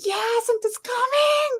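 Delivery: acted, very high, thrilled little-kid squeal. Retelling a child's excited reaction to a call: imitating a child screaming. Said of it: "she was screaming like".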